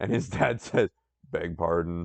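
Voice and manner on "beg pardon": lowered, put-on deep voice. Voice acting the dad's reply in a story: put-on deeper voice. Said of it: "I feel really weird using a deeper voice".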